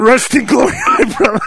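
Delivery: put-on tough biker voice. Mocking a big tough guy giving a bad tribute at a funeral: imitating a Sons of Anarchy tough guy. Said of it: "some big tough looking guy... He'll be like".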